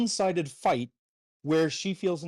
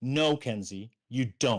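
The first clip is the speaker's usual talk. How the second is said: mock curt, low, terse, short delivery; 4 semitones lower than usual. Speaker retelling their own reply to kenzie on a phone call, retelling a terse reply. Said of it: "I had a equally terse tone back".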